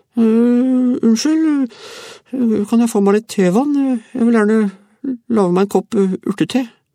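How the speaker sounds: mumbled, very high, squeaky, piping voice. The frightened man from room 7 speaks up, in a mumbling squeaky voice. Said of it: "den mumlende pipestemmen".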